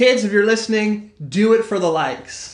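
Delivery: sarcastic, ironically earnest public-service tone. Speaker closing an interview addresses kids who may be listening, sarcastic. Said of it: "We're being sarcastic".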